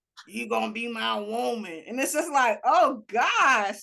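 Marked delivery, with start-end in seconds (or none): 0.3-1.9 gruff, rough, creaky, scary creepy-guy voice. Imitating a guy who sounded scary: impression of a scary-sounding guy. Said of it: "I do love your impression of this guy".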